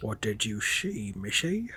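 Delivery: horrible, slow, drawling put-on Scottish accent. Retelling a film scene in a horrible Sean Connery impression. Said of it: "I was trying to do Sean Connery".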